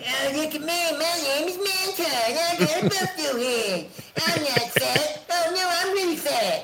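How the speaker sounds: very high, squeaky cartoon kid voice. Laying into some guys about being washed up, doing a Cartman voice. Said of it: "doing my Cartman voice".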